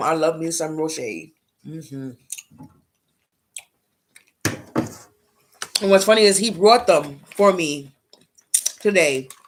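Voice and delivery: talking while eating, with smacking sounds. Telling a story while snacking on chocolates, eating while talking. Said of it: "if I'm smacking and you hear me while smacking".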